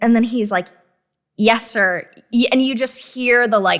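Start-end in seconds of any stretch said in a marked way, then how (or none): 1.4-2.1 put-on reluctant dismayed voice. Retelling the soldier's answer to an order to shoot: imitating a soldier's dismayed reply. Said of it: ""Oh, no," coming out in his voice".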